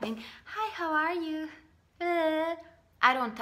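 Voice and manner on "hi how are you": high, put-on, empty small-talk voice. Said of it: "I don't talk like that".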